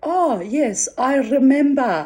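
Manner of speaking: put-on Yiddish-inflected Polish accent. Retelling a conversation, quoting the man's reply in a Polish Yiddish accent. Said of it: "Polish Yiddish accent".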